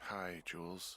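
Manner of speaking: drowsy, tired, sleepy, just-woken voice. Just woken and picking up the radio to a caller, sounding tired. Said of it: "you sound tired".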